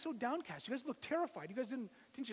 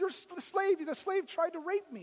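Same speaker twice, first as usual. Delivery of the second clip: high-pitched screaming; 5 semitones higher, 6 dB louder than usual. Telling a story, acting out a woman screaming after the man who fled her. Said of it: "she screams out".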